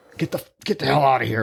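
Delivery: mock aggressive, angry muttering under the breath. Retelling a man refusing a customer's payment, mock-aggressive mutter. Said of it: "Like under his breath, like really aggressively".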